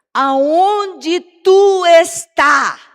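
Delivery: loud, slow, drawn-out calling shout.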